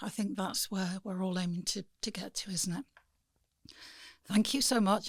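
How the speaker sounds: strained, hoarse voice giving out. Closing a conversation and thanking the guest, strained, failing voice. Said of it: "I'm sorry my voice has given up".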